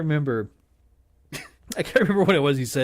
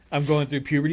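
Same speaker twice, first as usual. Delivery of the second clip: plain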